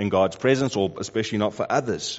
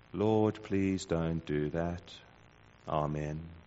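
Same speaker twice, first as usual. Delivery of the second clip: very quiet, low, robotic delivery; 5 semitones lower, 10 dB quieter than usual. Speaker imagining Moses answering God, in a quiet robotic Moses voice. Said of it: "in a quiet, robotic voice".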